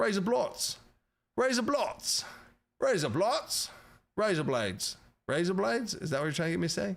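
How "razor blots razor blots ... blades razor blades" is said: put-on British Cockney accent, pitched up, on rise up lights. Saying a requested phrase aloud: British Cockney accent. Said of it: "say rise up lights in a British Cockney accent".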